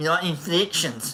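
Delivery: Afrikaans-accented English. Saying a word to show its inflections, Afrikaner accent. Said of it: "That's Afrikaner".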